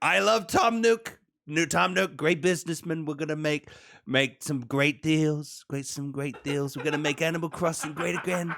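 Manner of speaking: boastful, president-style campaign-rally speaking manner. Joking about a president meeting a game character: Donald Trump impression. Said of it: "Five minutes after meeting Tom Nook".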